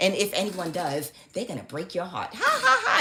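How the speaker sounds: taunting, soft, swooping witchy cackling laugh. Retelling what their mother said to them, with a mock witch-like cackle. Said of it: "she bust out laughing like a witch".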